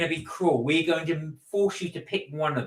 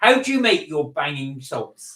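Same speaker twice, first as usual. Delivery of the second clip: ordinary talk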